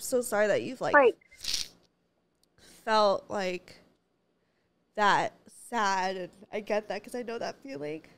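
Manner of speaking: teary, crying voice. Comforting someone who has felt sad, the speaker talks while crying. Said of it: "why am I crying?".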